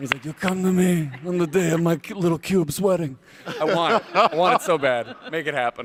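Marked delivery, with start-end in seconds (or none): 0.2-3.2 booming, loud gangster boss voice. Pitching the cube as Don Corleone, acting out his line: Don Corleone voice. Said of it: "he should be Don Corleone in The Godfather".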